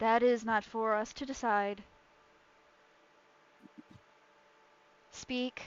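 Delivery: choir-like chorus voice. Voicing an unseen presence answering the party: many voices speaking as one. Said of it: "a voice that responds in both celestial and deep speech, because it's multiple voices speaking at once".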